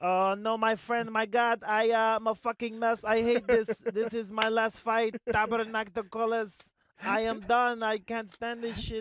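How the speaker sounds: shrill, very high, very loud, nervous and jittery. Retelling visiting GSP's room right before a fight, imitating a nervous GSP. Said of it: "G S P was the worst at that".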